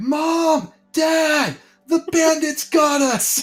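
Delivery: put-on very high, upset child's shouting voice. Narrating a scene where restrained kids are upset, voicing one child yelling. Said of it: "one of them is just yelling".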